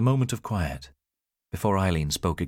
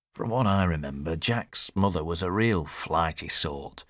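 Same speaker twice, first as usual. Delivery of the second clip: ordinary delivery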